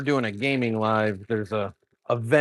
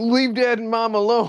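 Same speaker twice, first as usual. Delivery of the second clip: yelled out in a very high, shrill voice; 13 semitones higher, 4 dB louder than usual. Retelling how Chunky yelled during a chat raid: imitating Chunky yelling. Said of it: "yelling in the middle of the chats".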